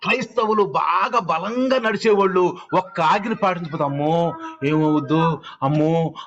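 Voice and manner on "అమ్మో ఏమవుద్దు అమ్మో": low, slow, drawn-out fretful, worried cry. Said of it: "అని ఆ ఆజ్ఞ పాటించిన దాకా నిద్రపోరు".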